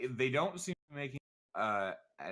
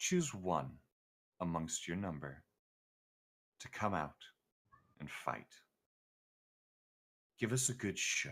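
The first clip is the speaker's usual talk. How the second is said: put-on older woman's voice through a demon, lower; 6 semitones lower, 3 dB quieter than usual. Voicing a matron whose voice speaks through a tiny demon: female voice from a demon's mouth. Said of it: "a female voice comes out instead".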